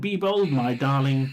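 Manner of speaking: ordinary talk, nothing marked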